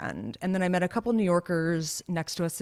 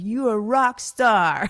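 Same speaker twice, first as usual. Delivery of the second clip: put-on slow yelling in a Russian accent; 4 semitones higher, 8 dB louder than usual. Retelling the speaker's sister yelling out as the speaker leaves the pool, Russian accent. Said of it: "she yells out in her Russian accent".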